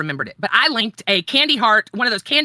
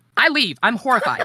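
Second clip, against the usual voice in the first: ordinary talk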